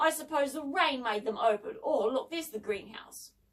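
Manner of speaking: plain reading voice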